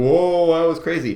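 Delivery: high, loud, amazed whoa. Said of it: "all four of them were like".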